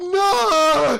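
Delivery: very high, loud crowd wailing.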